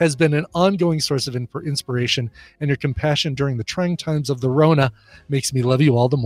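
ordinary delivery

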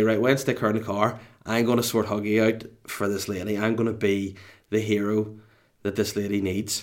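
usual speaking voice

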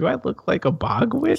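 very high, amused, spoken through laughter. Retelling a story about a young woman's question, imitating her laughing while speaking. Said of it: "kind of laughs and she says".

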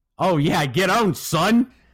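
full-throated, loud, high, drawn-out yell. A player yells after beating an opponent in a video game. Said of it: "Eli yelled".

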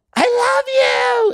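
high-pitched, shrill, gushing, excited squealing cry. Retelling what a heckling super fan yells: imitating an excited super fan. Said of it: "The heckler I get is the super fan".

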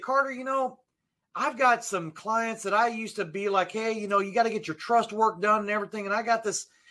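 put-on Southern accent. Quoting a man who used to talk to him, imitating a Southern drawl. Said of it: "I'm using a Southern drawl".

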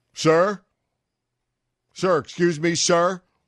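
put-on booming voice. Recalling fishing in the woods, he imitates an unexpected voice, booming voice. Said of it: "a rather booming voice saying".

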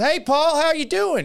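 put-on heavy Indiana accent, very high-pitched. Recalling meeting Larry Bird with his dad, the speaker quotes his greeting: Larry Bird, big Indiana accent. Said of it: "A big Indiana accent".

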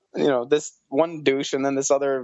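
plain

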